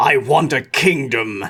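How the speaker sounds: slow, drawn-out growled dragon voice. Narrator voices the listener's character commanding a cowering goblin: growling. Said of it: "you growl".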